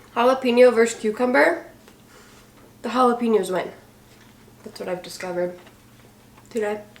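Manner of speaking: talking with mouth full of food. Talking to viewers while eating, speaking with food in mouth. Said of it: "So I'm talking with food in my mouth".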